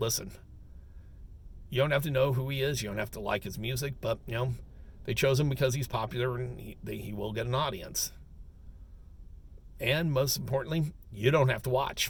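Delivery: normal talking voice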